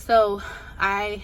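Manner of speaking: breathless winded talk.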